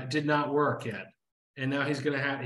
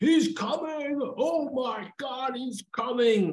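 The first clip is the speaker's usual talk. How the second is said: very high, drawn-out, excited screaming; 10 semitones higher than usual. Storyteller acting out a character pulling himself up off the deck, acting out excited yelling. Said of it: "he's yelling and screaming".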